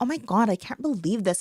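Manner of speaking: put-on California Valley girl voice. Imitating a typical Valley girl from California movies: Valley girl voice. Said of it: "a Valley girl".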